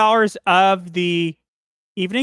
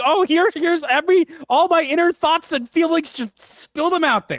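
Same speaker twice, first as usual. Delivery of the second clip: put-on mocking, teasing tone; 9 semitones higher than usual. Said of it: "You're just, like, going".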